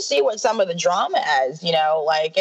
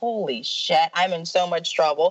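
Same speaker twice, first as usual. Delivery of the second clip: ordinary delivery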